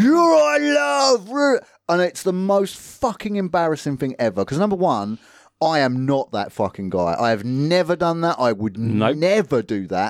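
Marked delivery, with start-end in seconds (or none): 0.0-1.6 play-acted very high screech, "love" stretched long. Speaker retells a passenger screaming at women from his car, retelling a scream. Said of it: "screaming at women".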